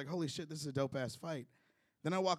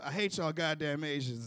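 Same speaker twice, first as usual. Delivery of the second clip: usual speaking voice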